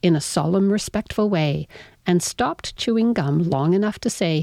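ordinary delivery, nothing marked

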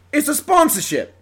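New Jersey accent attempt coming out British. Trying a sponsorship read in a jersey accent that comes out british. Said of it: "That was British, wasn't it?".

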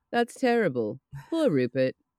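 dry, unbothered, hollow, uncaring tone. Recapping a scene from a rewatch, imitating Fran's deadpan delivery. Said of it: "Fran has the most deadpan delivery of".

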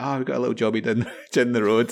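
mock giggling, stifled, under the breath. Retelling giggling at an older painter's word: imitating giggling under breath. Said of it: "giggling under my breath, was like".

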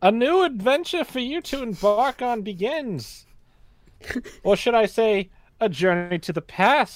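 grand announcer-style delivery, pitched way up high. Improvising a mock press release while someone else looks it up: SpongeBob announcer voice. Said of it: "Why does it sound like that SpongeBob announcer guy".

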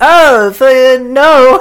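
very high, loud, blurted pterodactyl voice. Retelling a movie scene, doing Petrie the pterodactyl answering. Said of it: "My impression of Petrie the pterodactyl".

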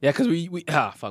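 voice cracking. Talking about a different way of growing up, voice cracking. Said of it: "my voice just cracked".

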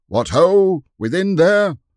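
very high, loud, high-pitched shout. Narrator reads a man beside the trumpeter calling to the gatehouse garrison, shouted. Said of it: "a man who was with the trumpeter shouted".

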